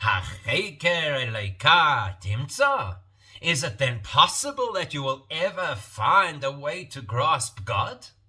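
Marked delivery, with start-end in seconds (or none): 0.0-3.0 Hebrew spoken with slight Yiddish accent. Repeating a verse as a rhetorical question: slight Yiddish accent. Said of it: "especially with a bit of a Yiddish accent".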